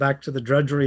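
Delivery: ordinary delivery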